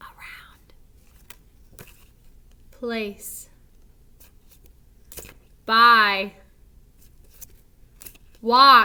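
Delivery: quiet whisper. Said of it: "So whisper this one".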